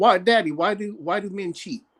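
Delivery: play-acted, tearful, crying voice. Retelling a daughter's upset phone call: imitating daughter crying. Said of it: "She crying, and she's like".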